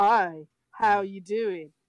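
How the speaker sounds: play-acted, slow, faintly disdainful. Retelling how Major greeted the podcast, imitating Major's disdainful greeting. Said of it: "that little bit of a disdain in his voice".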